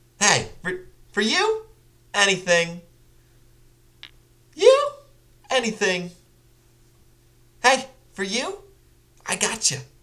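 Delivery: very high, hyper, chaotic character voice with scattered energy. Speaker trying out a voice, in a higher register. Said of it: "Higher register".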